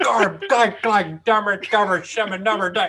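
garbled, jumbled nonsense cursing spilling out. Retelling a movie scene of a father fighting the boiler: imitating garbled muttered cursing. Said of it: "curses and, and utterances".

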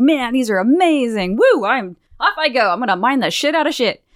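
put-on cute, thrilled, ecstatic Cockney accent. Speaker acts out a character ecstatic over new clothes; Walruka's cute Cockney accent. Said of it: "he's got this really cute little Cockney accent".

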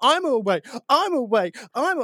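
loud mocking shout. Retelling banging on a pot alone in the house: retelling a loud mocking shout. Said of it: "me banging on a pot, going".

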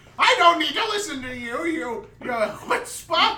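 freaking out, shouting. Voicing a character yelling at a player who says listen: NPC freaking out. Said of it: "he starts freaking out".

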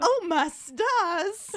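put-on southern belle voice. Criticizing a movie scene where Ron covers himself, Ron as mock-scandalized Southern belle. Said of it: "like he's a fucking scandalized Southern belle".

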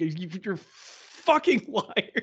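slow, struggling to force the words out. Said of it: "struggled to get that line out".

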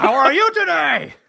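high, loud mock shouting.

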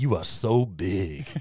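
low, deep put-on voice. Quoting what he keeps saying, in a deep voice. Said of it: "he's got this deep voice".

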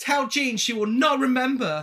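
put-on high Cockney accent. Retelling a film scene, the speaker voices Linda Blair: Cockney accent as Linda Blair. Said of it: "Why are you giving her a Cockney accent?".

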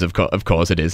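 usual speaking voice

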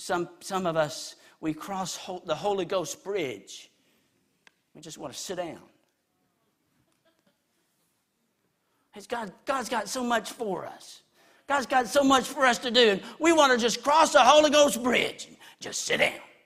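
high, loud rasping preacher voice. Quote T.W. Barnes, already up in years, leaning across the pulpit, in a raspy T.W. Barnes voice. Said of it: "His raspy voice".

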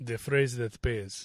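low, put-on Russian accent on every word. Host repeats a catchphrase in different accents for the listening audience, russian accent.

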